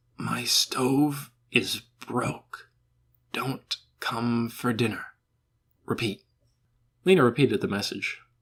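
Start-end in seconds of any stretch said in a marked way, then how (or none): 0.2-6.2 put-on slow, hoarse, dragged-out old man voice. Narrator reads an old man giving a girl a message, in Natty Pryn's slow, hoarse voice. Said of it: "The old man said in a slow, hoarse voice".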